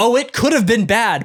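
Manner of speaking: the word have stressed and leaned on.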